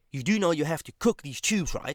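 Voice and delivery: acted hostile, bullying, nasty, intimidating tone. Retelling what a coworker asked about cooking tubes: imitating a nasty intimidating tone. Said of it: "with a nasty-ass tone, trying to intimidate me".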